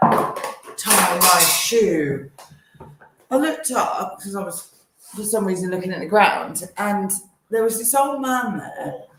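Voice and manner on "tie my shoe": loud, hostile, aggressive, demanding tone. Retelling a stranger's demand heard while pushing a pram: imitating a loud aggressive demand. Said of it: "but really loud and aggressive".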